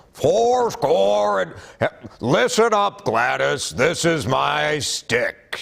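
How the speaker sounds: high-pitched voice, spoken slowly. Showing what an eagle should sound like, as Sam the Eagle. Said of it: "Eagle sounds like Sam the Eagle from the Muppets".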